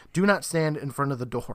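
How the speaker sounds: ordinary delivery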